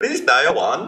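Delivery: put-on Indian accent. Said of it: "you gotta say it with an Indian accent".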